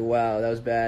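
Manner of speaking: ordinary talk, nothing marked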